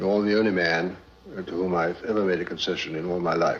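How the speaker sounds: plain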